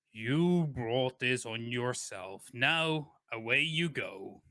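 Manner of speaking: big, lumbering, bulbous alien creature voice. Narrator describes a pleading captive answered by an unseen figure; lumbering, bulbous voice. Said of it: "a lumbering, bulbous voice going".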